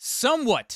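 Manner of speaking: heavy stress placed on the word somewhat. Reviewing a Batman Forever figure release, with stress on 'somewhat'. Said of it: "I have to put emphasis on the word somewhat".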